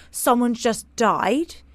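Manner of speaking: normal talking voice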